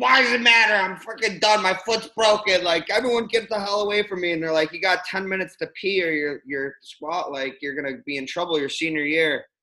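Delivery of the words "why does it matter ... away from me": loud, high-pitched screaming rant. Retelling being picked for a drug test, the speaker reenacts screaming at the lady. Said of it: "I'm screaming at the lady saying".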